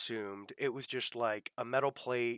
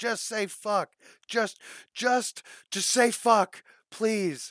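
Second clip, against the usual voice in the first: put-on very high, shrill, pleading drunken shout; 10 semitones higher, 8 dB louder than usual. Speaker retells a woman drunkenly yelling at her partner, retelling a drunken yell. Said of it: "drunkenly yelling at him".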